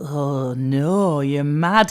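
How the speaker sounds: imitated dismayed tone. Retelling a mother-in-law's reaction to the challenge: imitating a dismayed mother-in-law. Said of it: "has done a face that's like".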